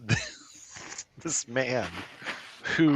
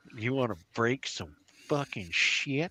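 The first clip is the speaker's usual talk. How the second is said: put-on quiet Southern rural accent; 5 dB quieter than usual. The man behind the counter greets walk-in customers, in a redneck accent. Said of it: "he's got a redneck accent".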